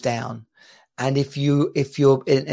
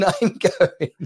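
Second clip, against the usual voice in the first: ordinary talk, nothing marked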